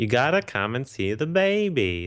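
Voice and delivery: put-on annoying tone, "baby" stretched out long. Discussing a TV subplot, quoting its one joke line, annoying Jerry voice. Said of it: "saying that line in the annoying voice".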